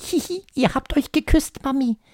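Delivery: grown woman's put-on child voice, very high. Speaker mimics a voice heard in a scene after parents kiss, adult woman's fake child voice. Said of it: "ich mache das jetzt genauso vor".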